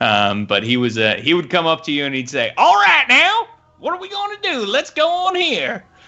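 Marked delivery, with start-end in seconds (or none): 2.6-5.8 Southern American character voice, pitched higher. Asked to do the voice of your character, do the Moses Gomer voice, Southern American. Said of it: "he was like Southern American".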